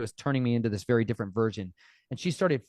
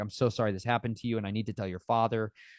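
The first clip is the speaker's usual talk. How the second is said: imitated hysterical crying; 3 dB quieter than usual. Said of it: "she started crying, like, super hard, hysterically".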